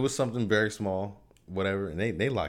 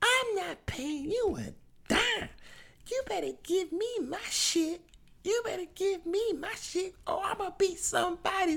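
deliberate shrill yelling, very high and drawn out. Retelling what a woman yelled during an argument: retelling her yelling. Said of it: "she's doing this yelling".

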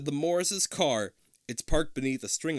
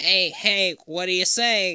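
put-on nerdy voice, higher and louder; 3 semitones higher, 7 dB louder than usual. Mocking a nerd named Todd, trying out a Todd voice. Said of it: "Let me see if I can do a Todd voice".

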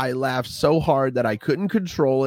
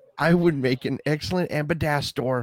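plain

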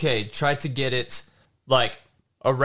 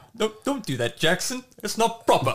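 put-on smart, distinguished, posh British accent, pitched up; 9 semitones higher than usual. Describing the voice in his head that scolds him, smart, distinguished British accent. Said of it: "some smart, distinguished, like voice".

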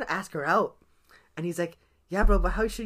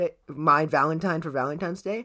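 usual speaking voice

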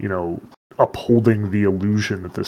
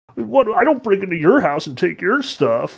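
silly, whiny, very high sing-song voice; 11 semitones higher, 3 dB louder than usual. Describing a dragon's reaction to heroes, imitating a whiny, silly dragon. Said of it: "his voice is silly and he's whiny".

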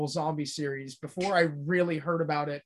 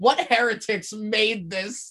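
put-on angry childlike outrage, higher and louder; 5 semitones higher, 5 dB louder than usual. Retelling being outraged as a kid at a zombie figure: imitating own angry kid self. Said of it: "You were so angry".

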